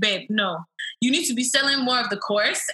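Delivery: put-on Nigerian accent. Quoting the speaker's husband about selling a course, husband's nigerian accent. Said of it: "Like in his Niger voice".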